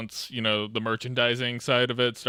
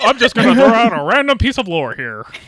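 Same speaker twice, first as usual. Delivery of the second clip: very high, loud voice from the throat; 11 semitones higher, 14 dB louder than usual. Retelling how he answers people asking about a character: George Lucas impression. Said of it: "that's how you do George Lucas".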